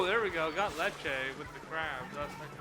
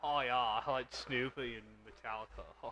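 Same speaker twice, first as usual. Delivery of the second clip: low, slow, laid-back surfer-bro drawl; 4 semitones lower, 5 dB quieter than usual. Showing the surfer bro version of the impression: Surfer Bro Chase voice. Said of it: "Surfer Bro Chase".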